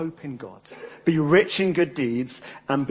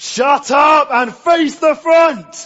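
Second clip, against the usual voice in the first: shrill, very loud, high, drawn-out bellow; 13 semitones higher, 11 dB louder than usual. Retelling a teacher's order to a noisy assembly: imitating a teacher bellowing. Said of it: "a voice bellows from behind us".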